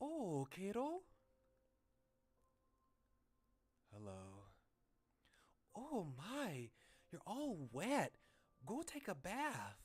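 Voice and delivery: put-on Midwestern accent, high and swooping. Voicing a mother greeting her wet son: Midwestern accent. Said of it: "like, a Midwestern accent".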